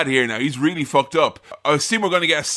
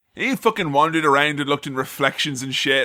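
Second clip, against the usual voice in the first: normal talking voice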